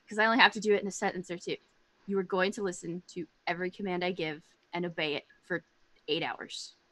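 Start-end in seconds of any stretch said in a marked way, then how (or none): 2.1-6.7 hushed, soft half-whisper. Casting a spell on a kitty, half-whispering to the kitty. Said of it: "I'm gonna whisper at it".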